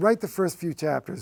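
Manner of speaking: ordinary talk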